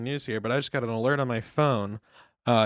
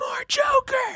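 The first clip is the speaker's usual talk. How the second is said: mock screaming, yelling, higher. Picturing a newsroom producer demanding more: mock screaming producer. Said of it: "the producer's just screaming".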